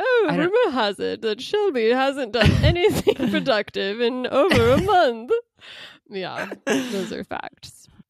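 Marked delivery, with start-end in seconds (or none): 0.0-5.3 proper, ladylike posh British accent, high and slow. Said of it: "ladylike British accent".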